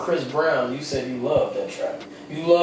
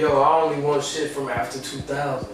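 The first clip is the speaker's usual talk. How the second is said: ordinary talk, nothing marked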